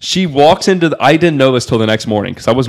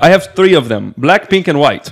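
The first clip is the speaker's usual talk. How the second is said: put-on strong, thick Russian accent; 4 semitones higher than usual. Speaker quoting an oligarch's daughter in a story, strong russian accent. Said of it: "very strong Russian accent".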